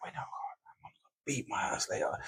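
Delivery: hushed, breathy, very quiet panicked whisper. Recalling waiting upstairs for a beating from mum, acting out past panic. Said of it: "You'd be sitting there panicking for hours".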